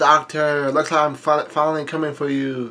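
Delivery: plain reading voice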